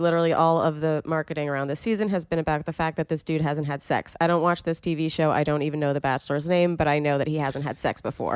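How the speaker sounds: ordinary talk, nothing marked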